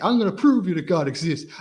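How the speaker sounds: belted out with big dramatic energy. Quoting a man's line, done more dramatically; dramatic Nicolas Cage impression. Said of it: "he says it more more dramatically with more energy".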